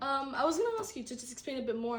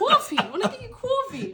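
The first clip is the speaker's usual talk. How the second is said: loud, high-pitched put-on New York accent; 10 semitones higher, 10 dB louder than usual. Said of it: "I did not know you could do that accent".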